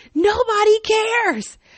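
high-pitched, loud yell. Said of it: "I yelled at her back".

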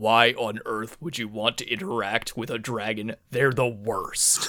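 gruff, hulking minotaur brute bully voice. Imagining a conversation between two characters: gruff minotaur bully voice. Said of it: "this giant minotaur bully who's just like".

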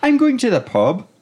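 Irish lilt with pitch lifting up at the end. Showing how an Irish accent makes statements sound like questions: Irish accent rising like a question. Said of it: "Irish accent as they're always asking a question".

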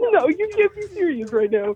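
very high-pitched voice, talking through laughter. Reacting in disbelief during a tense talk, laughing while talking. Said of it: "Are you laughing at me?".

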